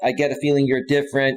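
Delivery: ordinary talk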